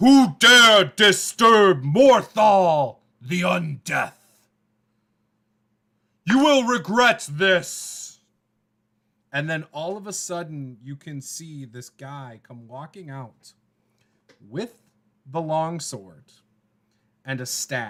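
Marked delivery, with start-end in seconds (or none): 0.0-8.2 thunderous, very loud, slow booming villain voice. A game master voicing a figure calling out from a cave, booming Morthal voice. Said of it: "a booming voice coming from the cave".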